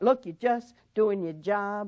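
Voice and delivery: ordinary talk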